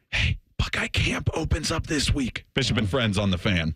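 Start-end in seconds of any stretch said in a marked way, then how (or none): 0.1-2.4 hushed, soft whisper. Deciding to whisper the part about Buckeye Camp opening: whispered. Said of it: "I guess I'll whisper this part".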